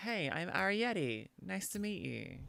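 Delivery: soft, gentle, friendly, unhurried tone. Giving advice on introducing yourself, the speaker demonstrates a greeting: softened tone. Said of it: "naturally soften your tone to be like".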